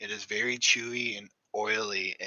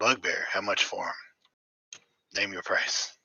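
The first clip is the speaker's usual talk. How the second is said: gruff grizzled character voice; 3 semitones lower than usual. Voicing a stranger asking to buy the bugbear: gruff grizzly stranger character. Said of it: "he's kind of a gruff, grizzly dude".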